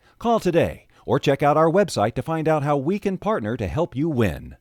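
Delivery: typical commercial announcer voice, loud and high. Reading a training-institute ad script aloud: typical announcer voice. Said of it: "that's typical announcer voice type of stuff".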